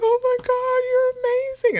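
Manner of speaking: very high, delirious sobbing, crying out the words. Retelling the moment the baby came out: imitating own delirious crying. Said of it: "delirious crying".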